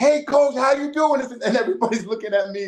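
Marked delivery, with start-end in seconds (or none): 0.0-1.2 mock full-voiced, high-pitched, loud scream. Retelling answering a call from a coach with poor hearing, retelling a scream. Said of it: "so I'm screaming".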